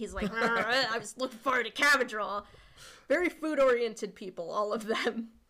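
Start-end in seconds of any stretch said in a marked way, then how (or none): 0.3-2.4 put-on angry grumbling voice. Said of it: "a peanut butter sandwich or something angrily".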